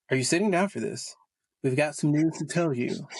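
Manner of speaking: plain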